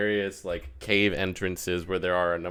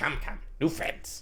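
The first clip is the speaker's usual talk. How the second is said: breathy, whispery character voice; 7 semitones higher, 7 dB quieter than usual. Voicing Kurd greeting the party across the bridge: voicing Kurd. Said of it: "he just kind of says".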